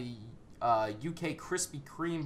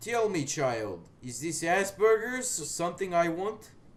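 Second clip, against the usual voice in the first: rusty put-on Russian accent drifting toward New Jersey; 4 semitones higher, 3 dB louder than usual. Right after the sponsor read, in character: rusty russian accent. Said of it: "my Russian accent is very rusty".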